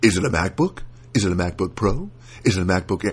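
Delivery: canned, automated phone-menu robot voice. Imitating the automated phone system on a support call, robot voice. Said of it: "they've got that stupid that robot voice".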